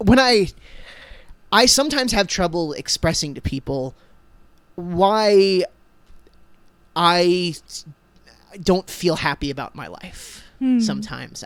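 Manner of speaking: cracking, breaking, choked-up, near-tears voice. Explaining why life feels hard after reading a lyric: voice breaking up. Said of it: "I'm breaking up a little bit here".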